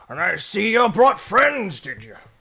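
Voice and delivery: put-on aged turtle character voice. Voicing an aged turtle greeting the visitors' friends: aged turtle character voice. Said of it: "kinda starts to walk forward".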